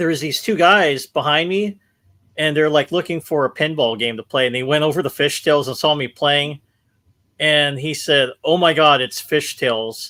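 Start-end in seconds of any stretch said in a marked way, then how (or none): 8.4-10.1 imitated unexcited, letdown dismay. Retelling what a stranger said on seeing the game: imitating unexcited dismay. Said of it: "But it wasn't, like, excitement".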